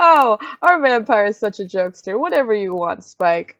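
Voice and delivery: loud, awkward speech through nervous laughter. Playing a show host covering for a guest on live TV: nervous laugh while talking. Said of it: "the host kind of nervously laugh".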